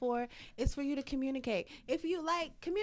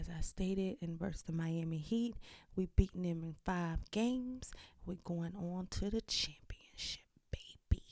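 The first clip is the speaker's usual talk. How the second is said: whispering, lower and quieter; 8 semitones lower, 4 dB quieter than usual. Giving a prediction for the week: whispering. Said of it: "Now she wants to whisper".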